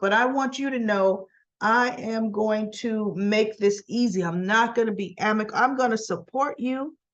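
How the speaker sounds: normal talking voice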